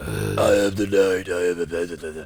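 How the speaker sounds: very slow, drawn-out, dark caped-vigilante voice.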